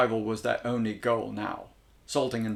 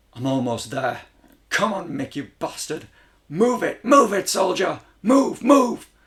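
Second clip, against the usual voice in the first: very loud, out-of-breath, desperate rising scream; 7 semitones higher, 8 dB louder than usual. Narrating a man fleeing toward the last ward's exit, screaming at himself. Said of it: "he screamed at himself, / He was desperate to catch his breath".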